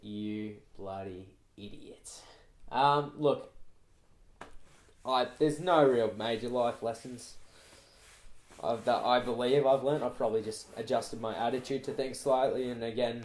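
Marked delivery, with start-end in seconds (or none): 0.0-2.2 soft, muttered, under-the-breath delivery. Retelling what you mutter after a customer leaves: imitating muttering under breath. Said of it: "Under your breath".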